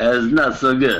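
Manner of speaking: high, made-up put-on skeleton accent. The game master voices a skeleton whose attack just missed, in a skeleton accent. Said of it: "What is this accent from a skeleton?".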